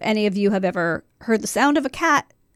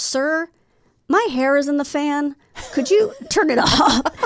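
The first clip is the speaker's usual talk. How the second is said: calm, slow, deadpan, matter-of-fact, unbothered; 5 semitones higher than usual. Retelling asking the cab driver to turn off the fan: imitating own matter-of-fact request. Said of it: "I was being very matter of fact about it".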